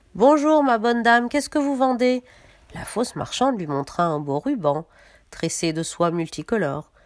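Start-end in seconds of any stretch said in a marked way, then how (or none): 0.2-2.2 high-pitched voice calling out. At the window, she calls to the peddler woman knocking at the door: called out.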